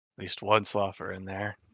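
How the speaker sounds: hushed, quiet half-whisper aside. In a tabletop game scene, tapping Edgar on the shoulder, half-whispering.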